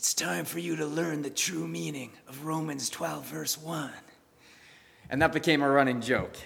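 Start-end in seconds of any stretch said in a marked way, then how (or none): 0.0-3.9 hushed, raspy, soft, joking, menacing-sounding voice. Recalling a college running joke of jokingly threatening someone, in a best Godfather voice. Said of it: "in your best Godfather voice".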